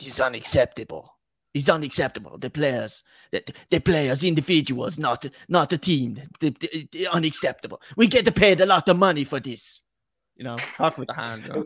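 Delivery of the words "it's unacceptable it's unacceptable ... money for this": exaggerated mock Italian accent. Co-hosts trading Antonio Conte impressions, one asked for his; Antonio Conte impression. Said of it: "I went full Italian there".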